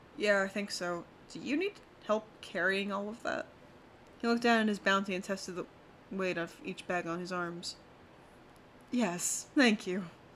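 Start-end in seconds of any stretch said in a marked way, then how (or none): 8.9-10.1 sheepish, embarrassed, bashful tone. Reading a story, a man accepts an offer of help with his bags: sheepish. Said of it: "he said sheepishly".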